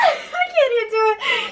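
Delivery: high, fast, panicked crying wail. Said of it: "and she's just like".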